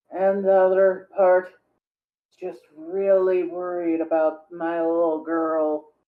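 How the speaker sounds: put-on low, slow, shaky, partly slurred drunk voice. Show someone how to do a drunk person's voice, in a partially slurred, shaky drunk voice. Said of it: "Just have to partially slur the words, make them sound shaky".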